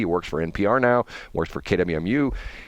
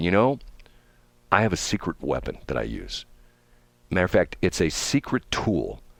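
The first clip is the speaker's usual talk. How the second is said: put-on dry, understated delivery. Quoting a man's answer about how he gets deals done, imitating a very dry voice. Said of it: "with his very dry voice".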